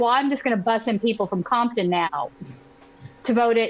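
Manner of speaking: usual speaking voice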